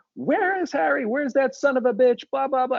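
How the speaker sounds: very high-pitched, screaming rant. Speaker retells the ambassador screaming at the speaker's mother on the phone, retelling Biddleduke screaming. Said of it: "screaming at my mother".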